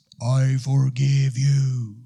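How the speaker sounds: deep, loud, booming heavenly-sounding voice. Asking why Jesus had to die, imagining God speaking from the heavens, deep God voice. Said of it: "take his deep God voice".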